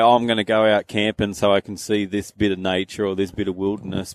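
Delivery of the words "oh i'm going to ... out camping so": plain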